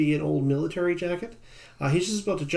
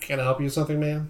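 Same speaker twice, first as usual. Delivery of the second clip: flat, even, level, unthreatening polite voice. Game master voicing a character who turns to a player: even, flat voice. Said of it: "in sort of an even, flat voice".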